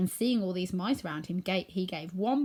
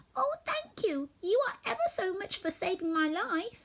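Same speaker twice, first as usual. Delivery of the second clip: tiny squeaking mouse voice, very high; 11 semitones higher than usual. Narrator reading the freed field mouse speaking to the woodman, squeaky little voice. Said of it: "it said in a squeaky little voice".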